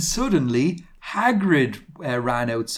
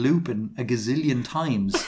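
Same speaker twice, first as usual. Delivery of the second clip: ordinary delivery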